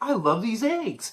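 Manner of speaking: high, gushing, over-polite, overly nice voice. Describing a man who bags the eggs, mock obnoxiously nice. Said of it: "he's like obnoxiously nice".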